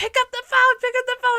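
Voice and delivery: very high, shrill, urgent repeated screaming. Recounting waiting for people to answer a call, retelling screaming at a laptop. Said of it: "I was literally screaming at my laptop".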